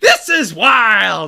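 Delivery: very loud, excited call with voice cracking. Announcing the eighth overall draft pick, voice cracking with excitement. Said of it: "my voice cracked again".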